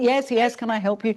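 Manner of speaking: frazzled, harried, flustered, put-upon voice. Retelling how a busy director greeted them: imitating a harried director. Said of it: "He was all harried and everything".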